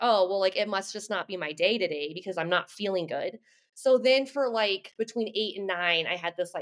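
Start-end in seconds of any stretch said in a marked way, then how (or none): none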